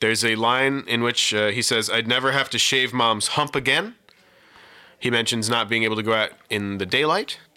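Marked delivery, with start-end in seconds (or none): none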